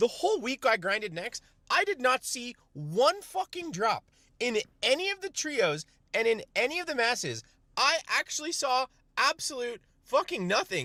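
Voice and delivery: high-pitched yelling full of sheer frustration. Telling chat about a long week of grinding: yelling. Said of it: "sorry, I'm yelling".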